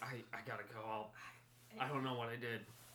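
soft, hushed stage-whisper half-whisper. Playing a character who quietly tells Kit they must leave: half-whispering. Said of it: "I'm a whisper to Kit real quick".

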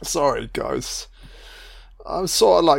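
laughing through tears. Reacting to a movie scene, apologizing to viewers: crying and laughing. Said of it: "crying and laughing right now".

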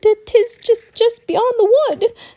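put-on very high, scared young boy's voice. Narrator reads a village boy answering travelers who ask the way: frightened boy's voice. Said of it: "a boy said in a frightened voice".

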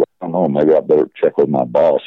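ordinary talk

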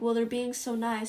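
ordinary talk, nothing marked

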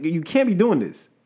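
ordinary delivery

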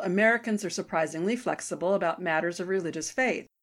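plain

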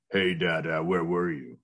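deep, dropped voice. Retelling what the son said after surgery: imitating son's deeper voice. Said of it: "his voice was so much deeper".

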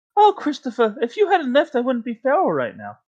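very high, sing-song, swooping cartoon bear voice. On a podcast episode, a speaker keeps up their Winnie the Pooh voice. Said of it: "they can't do the Pooh voice".

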